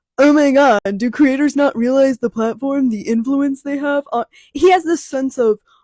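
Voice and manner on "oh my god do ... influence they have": sanctimonious, self-righteous, mocking, preachy voice. Imitating a creator's typical complaint: impression of August. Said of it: "I like the impression".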